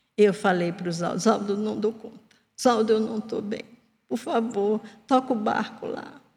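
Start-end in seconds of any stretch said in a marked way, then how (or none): 1.2-6.2 mock whimper, almost crying. Retelling her past call to a fellow teacher, imitating someone whimpering. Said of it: "Quase em prantos, choramingando".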